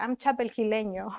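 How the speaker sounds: put-on child voice mixing Spanish and English. Retelling what the speaker's kid said about his identity: imitating a child speaking Spanglish. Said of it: "he said it, like, in Spanglish".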